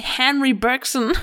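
American pronunciation. Pronouncing a philosopher's name the english way: american pronunciation. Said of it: "That's more American".

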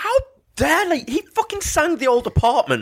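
put-on outraged, furious rant, pitched very high. Retelling their own reaction after hearing the band play: retelling own angry outburst. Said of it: "I just lost it with".

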